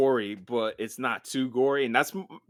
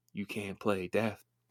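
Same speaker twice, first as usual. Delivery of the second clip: barely audible, very quiet half-whisper; 5 semitones lower, 10 dB quieter than usual. Quoting a line from the movies: imitating Tony Todd's half-whisper. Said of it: "He whispers in that tone".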